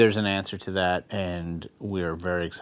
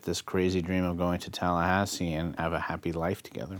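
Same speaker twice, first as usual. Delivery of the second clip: ordinary delivery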